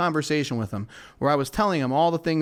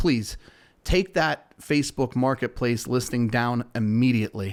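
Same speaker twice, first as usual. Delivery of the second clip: ordinary delivery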